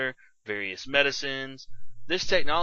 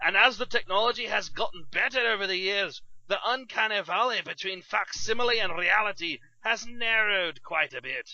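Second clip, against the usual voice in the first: poor fake Scottish accent, raised pitch; 6 semitones higher than usual. Explaining what a holodeck is to the co-host: bad Shrek voice. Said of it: "Why are you using a bad Scottish accent?".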